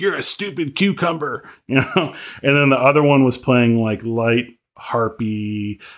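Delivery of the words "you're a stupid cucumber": high, screaming, yelled abusive tone. Describing people who screamed at greenhouse plants, imitating someone screaming. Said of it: "scream at the scream at the plants".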